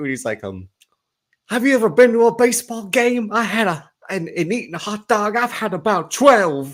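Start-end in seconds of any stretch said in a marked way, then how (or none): 1.5-6.7 very high-pitched sportscaster voice, pushed way up. Doing an impression of Will Ferrell's Harry Caray. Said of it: "I can only do Will Ferrell's Harry Caray".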